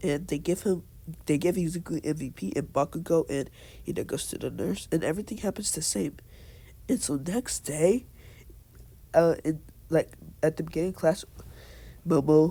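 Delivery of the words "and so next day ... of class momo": halting, stuttering, stammering speech. Summarizing a story's plot for viewers, stuttering. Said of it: "sorry for the stuttering there".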